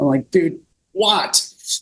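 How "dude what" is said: a bit annoyed, worn-out tone. Retelling own reply to a buddy calling him over: retelling own annoyed words. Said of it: "kind of annoyed".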